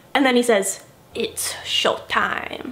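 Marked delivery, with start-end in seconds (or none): 1.2-2.8 terrible sinister villain whisper, hushed and breathy. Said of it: "that was a really terrible impression".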